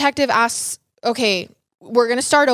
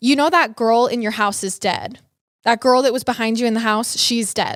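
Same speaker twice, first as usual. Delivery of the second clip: ordinary talk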